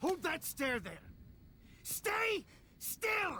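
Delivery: aggressive, barked delivery.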